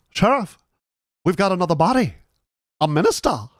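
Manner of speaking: put-on thick New England accent. Describing a Murder, She Wrote clip where Floyd tells the sheriff: Floyd's thick New England accent. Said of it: "he does it with like a super New England accent".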